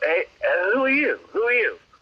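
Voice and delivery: put-on heavy, laid-on, thick English accent. Retelling what a man with an entourage said to him: thick English accent. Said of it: "he's got this really thick English accent".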